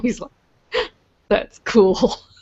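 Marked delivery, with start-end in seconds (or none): 1.3-2.2 put-on giggling speech. Retelling a man's reaction in a conversation, imitating a giggle. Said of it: "And he kind of giggled".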